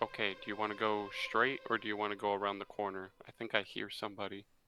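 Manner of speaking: very quiet, barely audible, in-character half-whisper. Asking a companion in character which way to go: half-whispering. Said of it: "I whisper and I'm like".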